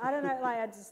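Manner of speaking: ordinary talk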